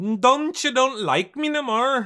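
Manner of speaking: very high, squeaky put-on Irish accent. Showing a listener what Tina sounds like, in a Tina impression that sounds Irish. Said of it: "That's more like an Irish".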